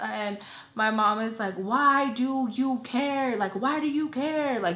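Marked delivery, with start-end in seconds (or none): 1.5-4.6 mock scolding yell, high-pitched. Retelling a mother's angry reply: imitating mom yelling. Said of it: "yelling at me".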